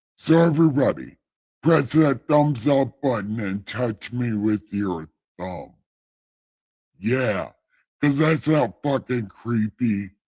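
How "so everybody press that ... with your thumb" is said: heavenly deity voice, commanding tone. Asking viewers to press the thumbs-up button, in God voice. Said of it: "why did I say that in God voice".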